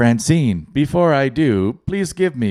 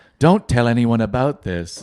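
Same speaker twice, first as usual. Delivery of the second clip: put-on smart speaker assistant voice. Joking about a smart speaker scamming people: Google Home voice. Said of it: "if you made that Google Home voice".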